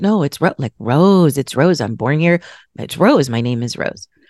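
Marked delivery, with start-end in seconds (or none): none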